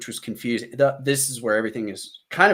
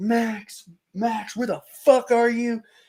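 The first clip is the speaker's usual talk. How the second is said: mock, very high, stretched-out, drawn-out shouting; 12 semitones higher than usual. Retelling a groggy moment of calling out for Max, retelling a yell. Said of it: "I'm like yelling at these guys".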